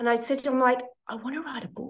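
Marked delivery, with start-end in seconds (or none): 1.1-1.9 barely audible half-whisper under the breath. Retelling telling a mentor a secret plan: imitating own half-whisper. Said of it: "whispered it".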